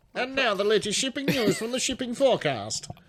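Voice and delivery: very high, 1940s British wireless newsreader announcer voice. Trying out a voice the others just suggested: British 1940s voice. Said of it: "I may be able to do the voice".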